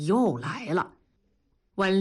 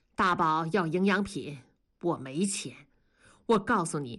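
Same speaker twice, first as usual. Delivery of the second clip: plain reading voice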